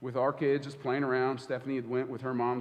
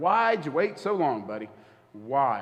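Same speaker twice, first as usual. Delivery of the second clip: mock, heavy, loud, slow, swooping sarcastic needling; 6 dB louder than usual. Imitating God teasing them for waiting so long: imitating sarcastic God. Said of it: "my God is a little sarcastic".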